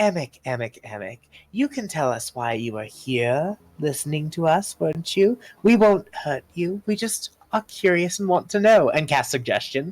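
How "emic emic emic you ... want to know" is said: lilting fey sylvan voice, pitched up. Voicing a character who leans in, smiling conspiratorially: sylvan voice. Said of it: "in the same sylvan voice that worked so well last time".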